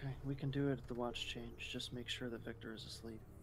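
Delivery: soft, low, hushed voice.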